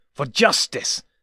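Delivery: loud, snarling, menacing delivery. Reading a story, the narrator voices the entity answering the doctor, snarling. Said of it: "the entity snarls".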